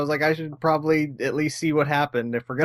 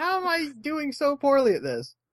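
put-on yell, higher pitch; 11 semitones higher than usual. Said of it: "I think at some point I yell at it".

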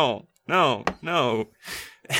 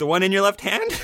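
upward inflection rising on the word hand; 3 semitones higher than usual. Showing how questioning sounds in a scalpel exchange: rising at the end on hand. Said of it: "I'm questioning it. Did you hear my voice go up?".

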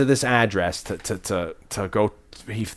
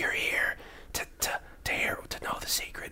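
secretive, hushed, very quiet, barely voiced whisper. Retelling what a film character says, imitating a whisper. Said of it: "And he's whispering".

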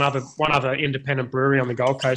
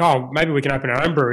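plain

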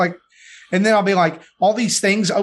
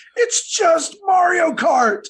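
put-on child's very high-pitched, drawn-out wailing scream; 9 semitones higher than usual. A parent retells their son screaming at the TV, imitating a child screaming. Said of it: "he's standing there screaming at the TV".

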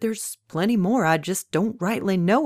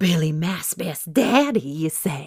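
hissed close and keen. Narrator reading a woman speaking to the man beside her, hissed. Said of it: "she hissed".

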